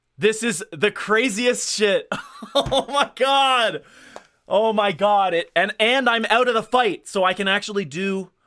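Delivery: thrilled, worked-up shouting, high and loud. Gamer reacting to a turn in a Pokémon battle, excited yelling. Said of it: "Sorry, I'm yelling".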